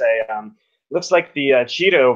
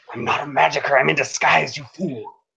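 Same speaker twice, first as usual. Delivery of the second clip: hushed, whispered, under the breath; 2 semitones higher than usual. In a tabletop game, a player pinned by an enemy whispers back to him: whispering. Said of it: "whisper back at him and say".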